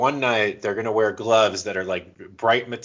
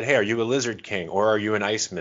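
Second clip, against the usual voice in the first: plain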